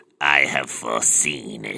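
deep, very slow voice, every word dragged out. Joking about an Emperor Palpatine cosplayer who went around saying: Emperor Palpatine voice. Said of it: "Who just went around going".

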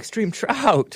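very high, cracking, breaking voice. Describing how a woman speaks, imitating a woman's breaking voice. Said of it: "imitating it properly".

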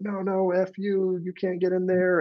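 acted very high, very slow, drawn-out screaming. Retelling people behind you in the taxi line, imitating their screaming. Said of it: "start screaming at us".

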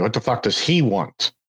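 usual speaking voice

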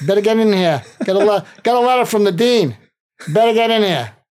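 put-on thick Irish accent. Retelling a phone call from the dean of students: imitating William McNary's thick Irish accent. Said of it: "he had a thick Irish accent".

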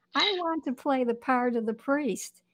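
ordinary talk, nothing marked

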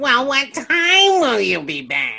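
whiny, whining voice. Giving non-alcoholic beer its own voice: whiny voice. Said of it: "that whiny voice of saying, like".

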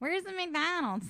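put-on Philly accent. Imitating how a man he is describing says it, in a Philly accent. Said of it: "he has like kind of a Philly".

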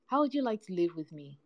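ordinary delivery

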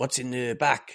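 bad put-on French accent. Retelling a policeman questioning Jono at a passport check, bad French accent. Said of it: "I'm going to do a bad accent now".

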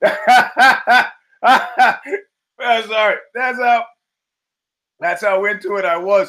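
laughing through the words, pitched high. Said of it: "I'm dying here".

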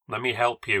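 ordinary delivery, nothing marked

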